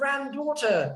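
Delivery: over-the-top British pronunciation. Retelling how he said the word to her: exaggerated british accent. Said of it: "like really British".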